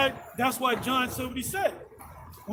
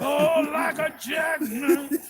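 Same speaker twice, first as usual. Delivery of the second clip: terrible impression: slow, low, rough, gravelly voice. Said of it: "that's a terrible voice".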